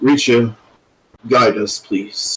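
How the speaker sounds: softly whispered, hushed. A character speaks up into the sky, not loud enough to be heard, whispering. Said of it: "he kind of whispers".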